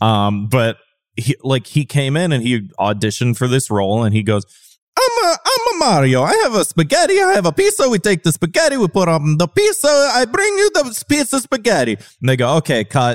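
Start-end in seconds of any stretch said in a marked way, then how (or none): 5.0-11.9 exaggerated Italian accent, much higher. Retelling how an actor auditioned for a role, exaggerated Italian accent. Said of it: "That's not how Italians from Brooklyn sound".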